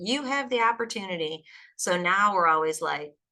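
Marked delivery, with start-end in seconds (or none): 0.0-1.4 put-on Southern American drawl. Quoting a friend's favourite saying: imitating a Southern accent. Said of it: "he has a Southern accent".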